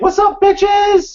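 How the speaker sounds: very high, loud casual voice. Retelling how a waiter greeted a group: imitating Mister Chow from The Hangover. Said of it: "he sounds and looks just like Mister Chow from The Hangover".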